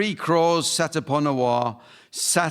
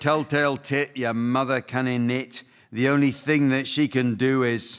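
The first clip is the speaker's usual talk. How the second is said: plain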